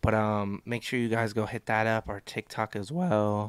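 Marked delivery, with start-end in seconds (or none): 2.1-3.5 voice cracking mid-phrase, drawn out. A co-host speaks to the listeners, voice cracking. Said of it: "my voice cracked".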